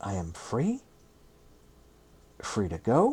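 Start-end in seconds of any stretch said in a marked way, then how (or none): 0.0-0.8 very drawn-out, very slow, doubting, unsure. A character, unsure he has understood, answers another, very slowly. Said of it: "said very slowly".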